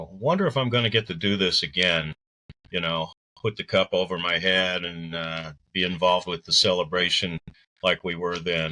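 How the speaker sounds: ordinary delivery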